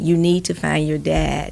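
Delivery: ordinary talk, nothing marked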